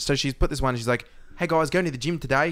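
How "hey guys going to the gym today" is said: put-on New Zealand accent, higher pitch. Imitating a woman's online video in a New Zealand accent. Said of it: "a New Zealand accent".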